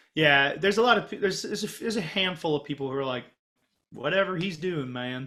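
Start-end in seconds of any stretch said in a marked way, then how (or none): 4.0-5.3 put-on Southern accent, yokel voice. Imitating people back home who shrug off the plan: imitating a Southern voice. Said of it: "not to be like the Southern voice".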